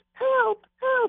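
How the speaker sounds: very high, mock tiny little old lady voice.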